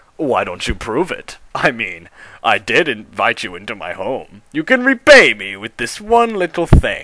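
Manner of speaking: low, wicked, sinister, devilish voice. Reading a story aloud, voicing a character asking for repayment: devilish voice. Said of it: "in the most devilish voice".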